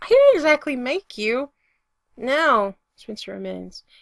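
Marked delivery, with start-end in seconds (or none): 0.0-1.5 loud, high, shrill, squeaky voice. [name] replies to Spencer, squeaking. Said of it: "[name] squeaks".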